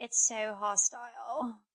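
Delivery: fake, put-on British accent, tried on. Imagining being British: put-on British accent. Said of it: "if I was British, I'd be like".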